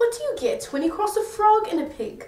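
put-on British accent. The speaker retells their own joke as a British version, in a British accent. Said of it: "best British accent I've ever done".

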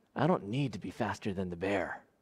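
hushed, half-whispered, under the breath. Telling a joke, voicing the other hiker's reply: half-whispering back. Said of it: "whispers back".

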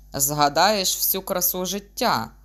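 loud, grumbling tone. A doctor answers his patient's question, grumbling. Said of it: "буркнув лікар".

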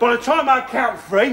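usual speaking voice

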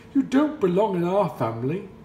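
loud, high-pitched exclaiming. Narrator voicing the wild ducks speaking to the ugly duckling, exclaiming. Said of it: "exclaimed the wild ducks".

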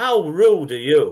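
hollered outburst. Retelling how a woman stood up and reacted: imitating someone shouting. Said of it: "she shouts".

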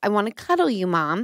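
put-on sweet child's voice. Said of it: "It's a Disney princess little voice".

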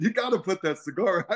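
play-acted, high, mild half-shout. Retelling how the bartender told a cigar smoker to stop: imitating someone yelling. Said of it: "she yelled at him six times".

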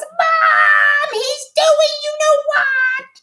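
very high, very slow, drawn-out howling cry. Reading Dudley's cry to his mom as he dashes toward the house, howling. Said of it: "Howled Dudley".

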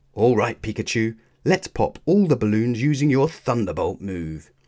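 plain reading voice

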